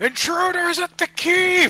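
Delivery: very high, shrill, shouted alarm cry. Voicing guards raising an alarm: guards shouting an alarm. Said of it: "you hear some people shout".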